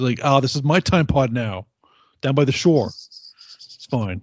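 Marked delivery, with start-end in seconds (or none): 0.2-2.9 put-on New Jersey accent. Mocking a time traveler from new jersey: put-on new jersey accent. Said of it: "I can't do a New Jersey accent".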